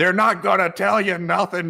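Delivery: loud yell. Recounting a flight delay, the speaker acts out a man who turned and yelled at them: retelling a yell. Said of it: "started yelling".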